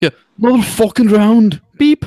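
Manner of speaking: very loud, very high, shrill Irish brogue. Repeating the pub order on request: Irish accent. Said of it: "Could you do that one more time?".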